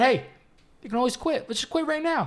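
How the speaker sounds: bright, very high, peppy voice. Retelling own reply during the drive: imitating own peppy tone.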